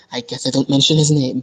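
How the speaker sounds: hushed, quiet, half-whispered voice. Voicing a character who quietly half-whispers to herself: half-whispering to herself. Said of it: "and then whispers to herself".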